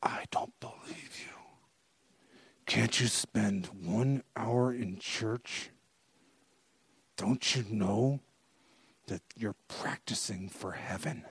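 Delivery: put-on clenched-teeth speech. Speaker retells what their mom said, acting out talking through teeth. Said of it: "through her teeth, she said".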